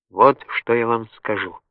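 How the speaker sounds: plain reading voice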